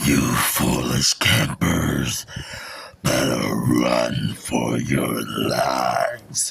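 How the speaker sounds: creaky, menacing spooky voice, very low and slow. The media guy addresses the campers, scary voice. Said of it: "I'm sorry if I creeped out any of you with my scary voice".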